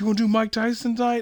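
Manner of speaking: mock very high, shrill yelled shout. Retelling how someone in a club crowd called out, imitating someone yelling from the crowd. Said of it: "yells it out of the crowd".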